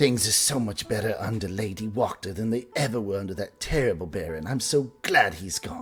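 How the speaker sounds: whispering like a gossip. Game narrator voicing an old woman the party overhears while passing: gossipy whisper. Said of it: "the old woman whisper in sort of a gossipy way".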